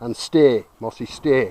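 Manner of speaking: loud, firm, authoritative, commanding voice. Demonstrating the stay command in training, in a firm commanding voice. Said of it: "in that commanding voice".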